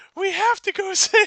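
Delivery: shrill, high-pitched, loud shout. Narrating a story, voicing the unit leader Alchemy after waking up: high-pitched Alchemy voice. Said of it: "I don't know why Alchemy has a high pitched voice".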